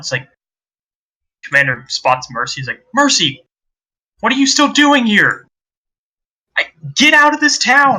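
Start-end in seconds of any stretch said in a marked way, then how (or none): 2.9-8.0 yelling, very high-pitched. Narrating the scene, the commander spots Mercy and calls out: Commander Marathur yelling. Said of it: "see they're like yelling".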